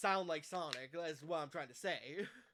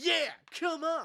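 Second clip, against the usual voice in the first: cartoon hedgehog voice, pitched up; 7 semitones higher, 4 dB louder than usual. Explaining Sonic's distinct way of speaking, doing a Sonic voice. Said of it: "Sonic has a very distinct way of speaking".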